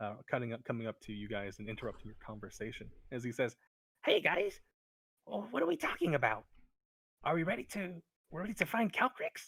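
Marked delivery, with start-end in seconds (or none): 4.0-9.5 very high, bouncy, happy, cheerful sing-song chatter. Voicing Meepo as he interrupts the group's conversation, happy Meepo voice. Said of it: "kind of happily skipping along".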